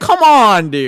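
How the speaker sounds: shrill, very loud scream at full blast. Retelling reacting to a TV scene: imitating own screaming at TV. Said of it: "screaming at this fucking T V screen".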